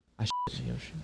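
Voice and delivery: soft unvoiced whisper.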